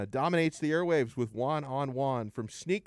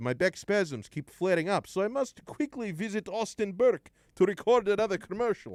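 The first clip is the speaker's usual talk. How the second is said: put-on slightly pitched-up, vampire-ish accent like old horror films; 7 semitones higher than usual. Reading a text-line message aloud in Goron's voice, like Count Dracula. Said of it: "I sounded a little bit like Count Dracula".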